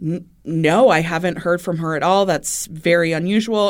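normal talking voice

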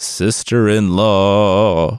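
called out loud, spooky and eerie. Reading a story, Monkey calls out from inside her tea in Monkey's spooky monkey voice. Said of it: "Monkey called out in a spooky monkey voice".

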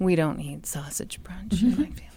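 soft, mournful, sorrowful voice. Repeating the other speaker's line about family breakfast, in a sad voice. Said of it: "That should always be said with a sad voice".

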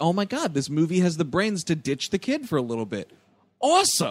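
ordinary talk, nothing marked

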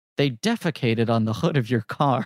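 cutting, pointed, sharp line delivery. Retelling a movie scene, quoting a detective's line: imitating Harry Dean Stanton's cutting delivery. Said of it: "that really cutting line delivery where Harry Dean Stanton looks at him and goes".

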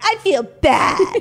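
put-on very high, loud two-year-old squeal. Mocking how a plain phrase sounds: sounding like a two-year-old. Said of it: "you do sound like a two-year-old".

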